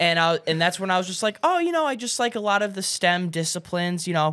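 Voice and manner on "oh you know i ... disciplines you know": high, cute, disarming and humble. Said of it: "I said it in a very cute, disarming, humbling way".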